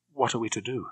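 anxious. Gala questions Bond about what they should do, asking anxiously. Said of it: "she asked anxiously".

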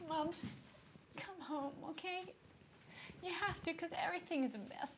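high, sobbing, crying through every word. Eve begs her mom to come home, sobbing.

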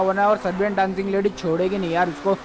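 plain

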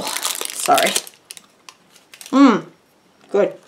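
talking with mouth full. Eating a candy while explaining to viewers, talking with mouth full. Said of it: "I promise not to talk with my mouth full".

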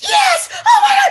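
excited screaming. Speaker retelling getting the labradoodle wait-list call, retelling excited screaming. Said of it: "I'm crying and then I'm laughing and I'm screaming".

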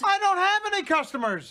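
loud, high-pitched yelling. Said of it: "why are you yelling at me".

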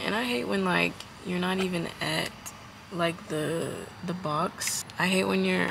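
slow, hushed, kept-down voice. Complaining at a drive-through, not wanting the staff to hear: talking low. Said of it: "I'm trying to talk low".

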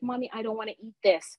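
put-on child's soft, half-whispered stage whisper. Retelling telling mom as a child she won't eat it: imitating a half-whisper. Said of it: "I whispered to my mom".

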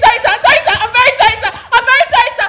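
put-on frantic panicked voice. Retelling what she said to a man who locked the door, retelling frantic pleading. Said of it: "So I freaked and I started kicking and kicking and saying".

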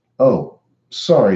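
insincere, unapologetic, not sounding sorry at all. Narrator reads a boy apologizing to another boy, not sounding sorry at all. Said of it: "not sounding sorry at all".

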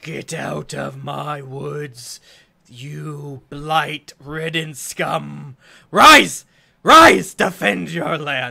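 very loud, horrid, monstrous undead creature shriek. Game master voicing an undead creature addressing the players: horrid undead creature voice. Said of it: "says to you in a horrid voice".

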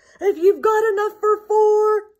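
booming, loud, big storybook lion roar. A narrator reads a story, giving the great big lion's reply at the door, roaring. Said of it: "he roared".

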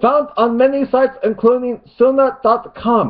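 put-on Arabic accent, very high-pitched and loud. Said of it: "plus I'll do a mock Arabic accent".

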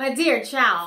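sounding disgusted. A fox answering a little girl who doubts he is a fox, disgusted. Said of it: "sounding right disgusted".

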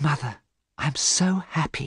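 hushed, slow, soft whisper. A daughter speaks to her mother in a read story; whispered. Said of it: "whispered Sybil Vane".

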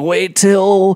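hopeful, eager fan voice, high and loud.

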